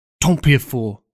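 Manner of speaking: loud, angry scolding outburst. She answers his desperate reassurance, shouted. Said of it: "she shouted".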